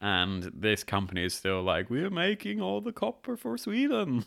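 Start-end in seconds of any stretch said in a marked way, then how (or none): 1.9-4.2 very high, slight put-on Norwegian lilt. Talking about an old Swedish copper company, voicing it in a slightly Norwegian accent. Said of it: "that's slightly more of a Norwegian accent".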